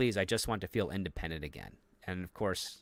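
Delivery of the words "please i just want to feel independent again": put-on pleading, imploring tone. Retelling a scene where a character begs another: imitating a pleading line. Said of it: "And he begs her".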